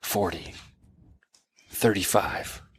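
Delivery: whispering. Speaker acts out a guy whispering numbers to a thirteen-year-old, retelling a whisper. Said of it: "you can hear the guy whisper".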